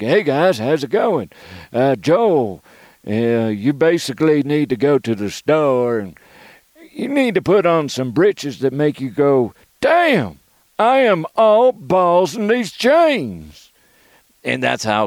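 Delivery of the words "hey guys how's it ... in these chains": put-on cowboy character voice. Retelling the first time doing a character voice on air: cowboy voice. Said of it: "Like Cowboy DeHuff".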